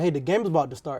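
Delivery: ordinary talk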